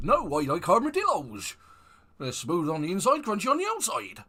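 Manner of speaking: mock West Country character accent. Retelling a bloke's reply to someone offering him a dime bar, in a sort of West Country accent. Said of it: "sort of like West Country accent".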